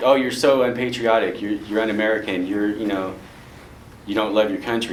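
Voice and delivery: ordinary talk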